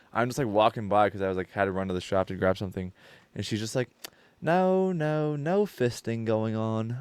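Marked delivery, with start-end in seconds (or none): 4.4-6.9 put-on high, gentle, very slow, soft-spoken lady's accent. Speaker recounts walking past a lady talking with others, imitating her soft-spoken accent. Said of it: "I'm like in her accent because she's like a super soft spoken innocent lady".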